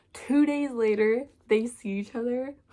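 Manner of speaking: talking through giggles. Summarizing a favorite book's plot, giggling while talking. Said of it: "I'm, like, giggling 'cause I love this book".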